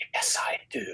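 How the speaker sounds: very quiet, breathy, barely voiced whisper. Acting out what he said before throwing himself back down in bed, retelling a whisper. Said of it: "in a whispered voice says".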